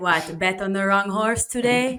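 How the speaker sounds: speaking with a put-on Italian accent. Wife imitates her husband teasing her about a trading loss, put-on Italian accent. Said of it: "I love the Italian".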